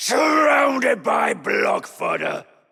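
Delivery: growling.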